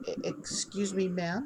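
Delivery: very quiet, cute, adorable halting broken phrasing. A little gnome tugs on the listener's robes, speaking adorable broken Elvish. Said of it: "in the most adorable broken Elvish".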